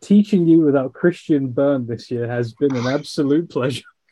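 dry ironic tone. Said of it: "You can hear the sarcasm".

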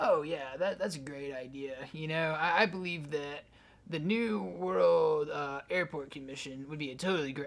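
put-on disgruntled worker voice. A speaker imagines the people who chose the dedication marker, in a disgruntled worker voice. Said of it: "I'm going to stop doing the voice now".

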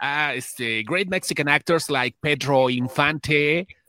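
put-on English-accented voice. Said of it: "Así decía".

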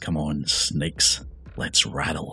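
odd, unfamiliar, slow whispering voice. Game narrator voicing the town mayor addressing the snakes; strange whispering voice. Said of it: "speaks in a strange, whispering voice".

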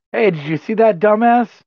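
loud, high-pitched shout. Calling out in character to another character during a fight: in-character shout. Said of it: "I'll shout".

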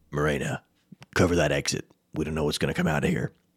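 low, deep, gruff in-character voice. A game master shows how he gives orders in character to his players: gruff Zeral voice. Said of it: "I just kind of get more gruff like this".

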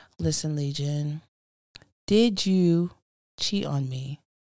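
grave, serious, very low voice. Describing a video, the speaker quotes an actress sitting on the bed: retelling a serious low tone. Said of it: "Serious, really low tone".

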